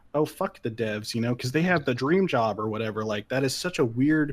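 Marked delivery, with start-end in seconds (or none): none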